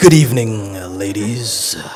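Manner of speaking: put-on sexy voice. Poet greeting a room full of ladies before his poem, put-on sexy voice. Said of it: "Allow me to put on my sexy voice".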